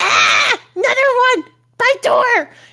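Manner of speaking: wild creature screech, very high and climbing. Narrating a game, the speaker voices a kobold that starts screaming. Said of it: "and just like starts screaming".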